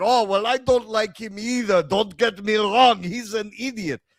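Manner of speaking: put-on high-pitched voice with Israeli accent. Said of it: "He's like".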